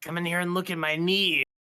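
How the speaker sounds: mock creepy old man whisper. Mocking another player as a creepy old man in a closet: imitating a creepy old man whispering. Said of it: "like a creepy old man hanging out in a closet, like, whispering".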